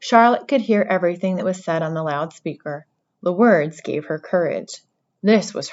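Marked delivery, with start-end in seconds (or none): none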